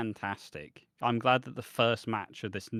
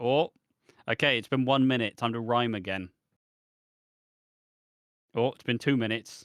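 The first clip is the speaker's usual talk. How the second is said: plain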